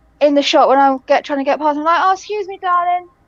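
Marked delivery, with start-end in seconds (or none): 2.1-3.0 put-on sweet, courteous, friendly and polite voice. Retelling how to squeeze past people in a shop: imitating own friendly politeness. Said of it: "I tend to be very friendly to people".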